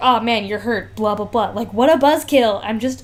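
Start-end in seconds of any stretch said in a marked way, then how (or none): none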